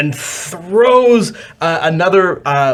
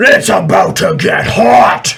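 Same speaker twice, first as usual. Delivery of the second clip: louder, higher, menacing troll voice. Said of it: "magma troll turns and says".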